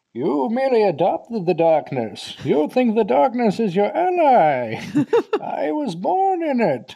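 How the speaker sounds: muffled, loud, very high villain voice, "ally" drawn out. Telling listeners about a film villain's speech, doing a Bane impression. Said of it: "I usually need a mug for this impression".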